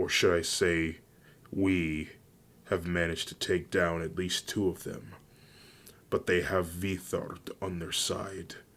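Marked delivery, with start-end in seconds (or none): none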